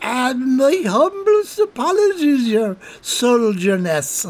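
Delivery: chuckling nervously through the words. Narrating Colm apologizing to the soldier as he squirms away, chuckling nervously. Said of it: "chuckling nervously down the barrel".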